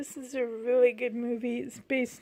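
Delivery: voice catching and choked up, close to crying. Watching a favorite movie part that always makes the speaker cry, near tears. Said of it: "this part always makes me cry".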